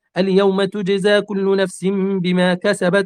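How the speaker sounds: ordinary talk, nothing marked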